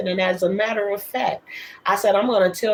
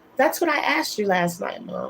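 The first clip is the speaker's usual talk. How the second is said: ordinary talk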